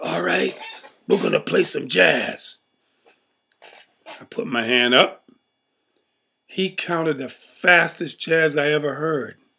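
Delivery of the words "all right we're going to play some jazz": rough, creaky mob boss voice. Retelling what a man said before they played jazz: Godfather voice. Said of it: "he talked like the Godfather".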